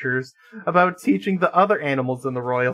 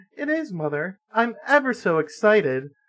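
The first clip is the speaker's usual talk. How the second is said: sugary sweet princess voice, pitched way up; 5 semitones higher than usual. Reading a princess answering her mother: voice hitched up an octave. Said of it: "Jazz hitched her voice up an octave".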